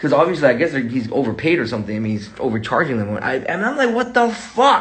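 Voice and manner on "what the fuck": angry, high-pitched exclamation of disbelief. Retelling a reaction to a friend's text: imitating own angry reaction. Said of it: "I am so fucking pissed off".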